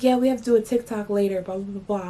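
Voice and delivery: plain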